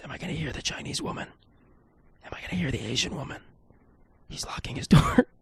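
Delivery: breathy, hushed, very soft, barely voiced whisper. Speaker listens while a neighbor leaves his house, whispering. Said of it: "I don't know why I'm whispering".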